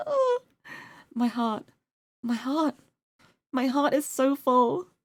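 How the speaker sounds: choked up with emotion. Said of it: "I'm getting emotional".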